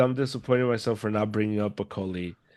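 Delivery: ordinary delivery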